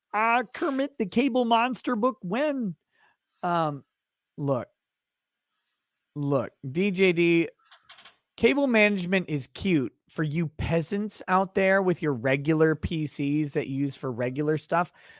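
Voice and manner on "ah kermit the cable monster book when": put-on character voice, lifted high. Reading a viewer's chat message aloud in a Kermit voice. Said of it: "Say it in a Kermit voice".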